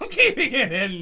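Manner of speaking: laughing while speaking. Speaker recounting a take they've redone many times, laughing. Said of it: "*while laughing*".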